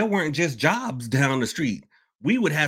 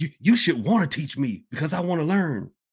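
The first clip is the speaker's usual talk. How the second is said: put-on upset, aggrieved, entitled tone. Retelling people who came and got upset: imitating an upset person. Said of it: "get upset going".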